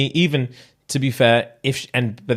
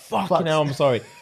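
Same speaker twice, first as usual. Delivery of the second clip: put-on words through howls of laughter, high; 5 semitones higher than usual. Acting out a girl apologizing after snotting on chips: imitating someone howling with laughter. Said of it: "starts howling like".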